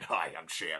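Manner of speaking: very low, deep, soft, terrible cartoon cat voice. Talking about the Four Kids dub, the speaker tries the character in a terrible Sham voice. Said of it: "Terrible voice".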